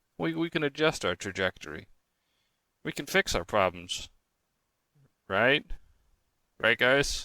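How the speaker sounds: put-on computer voice. Host addressing the guys, talking like Mister Apple. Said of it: "I talked like like Mister Apple there".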